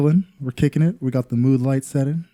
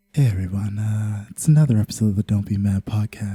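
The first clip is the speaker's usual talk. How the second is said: put-on ASMR-style voice; 4 semitones lower than usual. Doing the podcast intro, speak in the Kelly voice. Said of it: "I'm gonna A S M R this".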